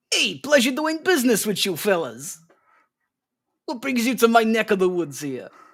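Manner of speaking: put-on New Jersey accent. Showing how a character should have talked: thick New Jersey accent. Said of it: "I was hoping he'd have like a thick New Jersey accent".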